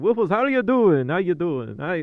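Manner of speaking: put-on Transylvanian accent. Greeting someone after struggling to read their name: put-on Transylvanian accent. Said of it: "this Transylvanian accent just came out of nowhere".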